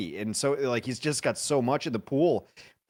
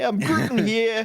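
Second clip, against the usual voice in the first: put-on New York accent, higher and louder; 10 semitones higher, 5 dB louder than usual. Joking about a player's Groot hero: Groot with a New York accent. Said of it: "Groot with a New York accent".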